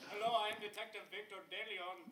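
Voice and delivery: put-on Indian accent. Retelling a phone caller posing as a detective: imitating his Indian accent. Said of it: "an Indian accent or something".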